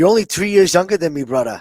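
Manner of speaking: put-on loud, high, cool Hawaiian accent. Retell Max's reply to Topuria, who called him too old, in Max's cool Hawaiian accent. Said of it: "in his cool Hawaiian accent".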